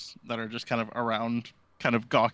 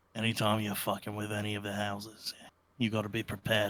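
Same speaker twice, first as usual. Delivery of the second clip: quiet, lowered, confiding, conspiratorial undertone; 5 dB quieter than usual. Quoting a man's advice about the houses: retelling lowered conspiratorial voice. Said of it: "conspiratorially lowers his voice a little bit".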